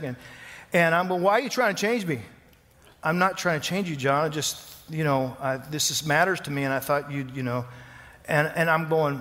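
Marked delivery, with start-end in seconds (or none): 1.2-2.2 heated, argumentative, pushing-back delivery. Retelling your side of an argument with her: acting out arguing. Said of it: "then we're having an argument".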